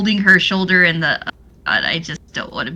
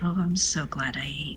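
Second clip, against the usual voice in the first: very quiet, low, muttered under-the-breath aside; 4 semitones lower, 14 dB quieter than usual. During a host's feast speech in a role-play game, a player's character mutters under her breath. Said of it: "Callie under her breath".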